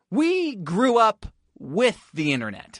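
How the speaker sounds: heavy stress on "we", slow and deliberate.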